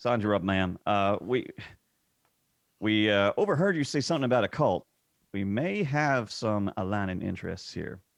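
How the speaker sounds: attempted put-on southern US accent. Player voicing a character addressing a woman they overheard, in an attempted southern accent. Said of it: "forgive my attempt at a southern accent".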